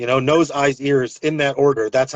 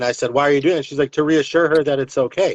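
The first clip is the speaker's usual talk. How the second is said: plain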